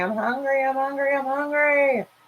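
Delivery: put-on play-acted little girl voice, high-pitched screaming, words repeated. Retelling how a little girl held at the table was screaming. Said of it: "she's screaming".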